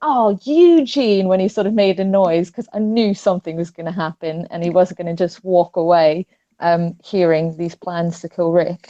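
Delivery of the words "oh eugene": acted-out, alarmed, high, worried cry. Retelling screaming at the television when a character made a noise: retelling own scream at the tv. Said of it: "but I screamed, like, at the telly".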